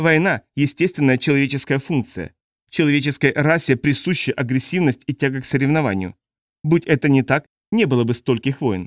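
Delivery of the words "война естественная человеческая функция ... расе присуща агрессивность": usual speaking voice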